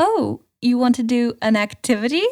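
stiff, robotic phrasing. Describing how a woman on the show talked oddly: imitating robotic formal speech. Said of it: "in like a weird sort of like robotic like".

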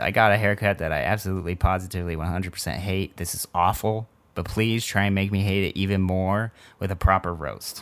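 ordinary talk

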